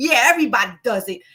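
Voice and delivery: put-on Rhode Island regional accent. Retelling a man's reply after being called a creep, in a stupid Rhode Island accent. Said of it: "with the real stupid Rhode Island accent".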